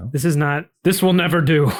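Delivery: put-on muttered whisper. Acting out what Mark whispers in the situation, Mark muttering under breath. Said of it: "just kind of whispering that under his breath".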